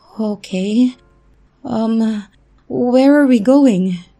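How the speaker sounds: put-on high, slow, shaking voice trembling with fear. Reading a story aloud, asking a stranger where they are going: voice shaking with fear. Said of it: "I said with my voice shaking".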